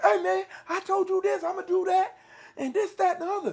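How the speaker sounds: very high-pitched, shrill yelling rant. Acting out somebody confronting a quiet man, retelling someone yelling. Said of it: "why are you yelling at me?".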